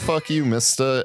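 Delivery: ordinary delivery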